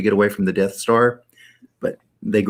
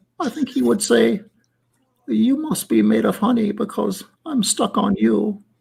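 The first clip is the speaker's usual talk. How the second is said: rasping, rough, creaky storybook cartoon bear voice; 13 semitones higher than usual. Imagining what Pooh Bear would say, the speaker does a Pooh Bear voice. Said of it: "I got to get the voice right".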